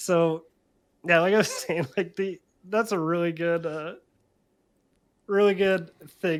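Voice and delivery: loud speech breaking through hard laughter. Explaining why a card deck is fun to play, laughing hard while talking. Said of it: "I'm laughing so hard".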